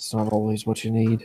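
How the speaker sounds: muttered under breath. Narrator voicing a character who lowers his head, mumbling under his breath. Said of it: "just kind of mumble under his breath".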